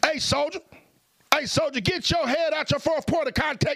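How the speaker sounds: drill sergeant voice, pitched very high. Speaker demonstrating different voices, addressing a soldier: drill sergeant voice. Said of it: "It's a drill sergeant voice".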